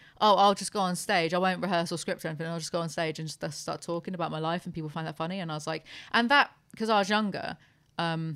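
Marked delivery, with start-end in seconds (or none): none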